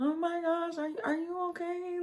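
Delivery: very quiet, slow, worried half-whisper. Retelling what the speaker half-whispered when someone first fell: retelling a half-whispered question. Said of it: "I'm like whispering".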